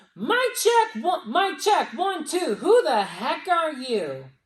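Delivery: booming, very loud, very high, drawn-out call. Retelling a story, voicing an unexpected voice heard on the device, really loud. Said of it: "this really loud voice".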